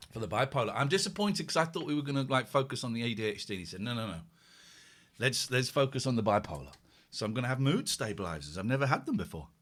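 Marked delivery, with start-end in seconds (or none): none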